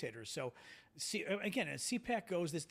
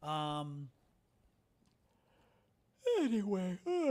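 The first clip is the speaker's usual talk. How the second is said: speaking through a yawn, louder; 2 semitones higher, 4 dB louder than usual. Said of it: "I'm sorry, I'm yawning".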